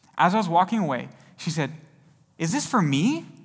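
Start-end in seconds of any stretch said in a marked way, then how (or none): 2.4-3.2 excited, eager delivery full of excitement. Retelling a lady's reply on being handed a tract: imitating an excited question. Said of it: "with excitement in her voice".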